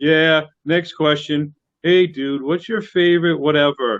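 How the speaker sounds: bored, low, unexcited, going-through-the-motions tone. Imitating an interviewer who is not excited about the band: imitating an unexcited interviewer. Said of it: "if you're not excited about it".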